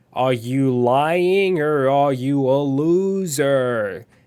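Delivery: put-on very slow, drawn-out, condescending baby talk. Retelling an interrogation scene from a detective show, Agatha's baby voice. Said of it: "talks to him in like a baby voice".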